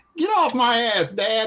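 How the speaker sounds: very high, squeaky voice pushed way up. Retelling a moment at the table, imitating Andrew's high voice. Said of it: "And his high voice".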